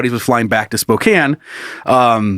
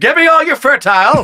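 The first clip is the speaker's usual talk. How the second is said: high, barked mock commander voice. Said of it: "You're like".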